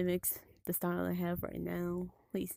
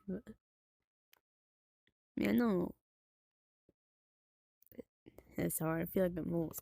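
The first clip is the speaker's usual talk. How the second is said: tearful, starting to cry. Talking about finding it hard, starting to cry. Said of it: "starting to cry a little bit".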